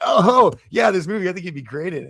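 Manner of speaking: put-on squeaky, very high, clumsy, awkward teenager voice. Retelling a blurted reply to an actress at a party: imitating own awkward teen-like reply. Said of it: "like a dumbass high school kid who started puberty".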